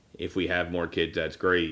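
plain

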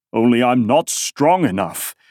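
plain

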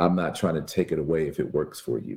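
ordinary delivery

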